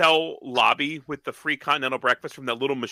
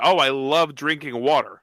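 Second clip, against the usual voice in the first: ordinary talk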